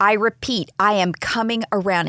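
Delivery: normal talking voice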